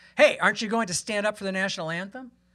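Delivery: mock sudden yell, calling out. Retelling how a man in the crowd yelled at the speaker: imitating a man yelling. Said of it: "just some guy yells at me".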